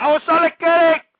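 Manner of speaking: very loud, shrill, high outburst. Quoting a movie character to calm upset callers: Tony Montana voice. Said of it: "in the words of the Tony Montana character".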